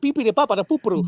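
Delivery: put-on cartoon Italian gibberish. Comparing to a cartoon's fake Italian: Peter Griffin's fake Italian. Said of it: "how Peter Griffin did the Italian".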